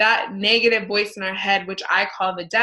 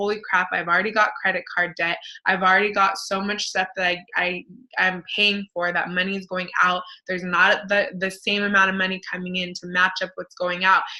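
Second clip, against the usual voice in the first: ordinary delivery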